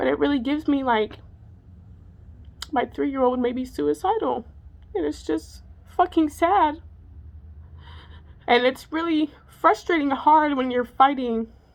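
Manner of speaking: tearful, crying, voice breaking. Telling viewers about their three-year-old and a hard fight: crying. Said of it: "I can't believe I'm crying".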